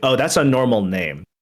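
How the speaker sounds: ordinary talk, nothing marked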